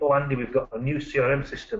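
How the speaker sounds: ordinary talk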